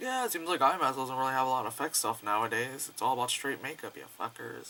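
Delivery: ordinary talk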